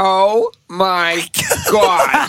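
big, loud, swooping animated sitcom-style delivery. Asked for an impression, doing a Janice impression: Janice voice. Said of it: "That's my Janice impression".

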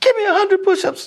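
very high, shrill, high-pitched yelling. Retelling a staff member ordering push-ups: imitating someone yelling. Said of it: "he's yelling so loud".

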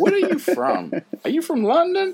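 very high, bad put-on American accent. Imitating an American in a store who hears an accent, in an awful American accent. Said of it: "that awful version of your accent".

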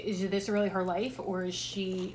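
plain

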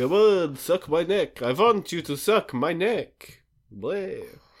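hammy cheap vampire voice. Hacky sack guy taunting Dorian to fly down: cheesy Dracula voice. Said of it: "doing a cheesy Dracula voice".

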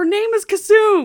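very high, loud shouted outburst. Retelling a film scene where Amon corrects a name: imitating Amon yelling. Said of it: "yelling at him".

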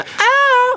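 fake high-pitched scream. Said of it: "that lady scream that [name] does".

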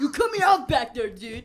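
very loud Boston bus-driver holler. Joking on a show about bus drivers fighting over spots: MBTA bus driver impression. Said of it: "that was my impression of the MBTA bus drivers".

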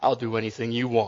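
voice dropped as deep as possible, low and soft. Reading a joke aloud, a young man's line to a woman: deepest voice. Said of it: "said in his deepest voice".

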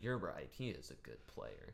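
low, soft, patronizing, condescending sing-song. Agreeing after being told not to diss a player, condescending. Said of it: "That condescending tone".

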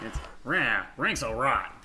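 put-on New Jersey mobster cartoon-dog voice. Describing how an episode voiced the cartoon dog, doing Scooby-Doo like a mobster. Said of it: "sounded like a New Jersey construction working mobster".

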